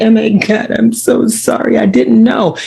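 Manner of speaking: put-on weepy, over-sorry, slow, tearful voice. Mocking someone who apologizes when confronted: mock tearful apology. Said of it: "you wanna cry so we can end the conversation".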